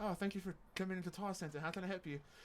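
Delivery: soft, decent put-on British accent. Retelling how she greeted people walking in when bored: decent British accent. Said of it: "I could do a decent British accent".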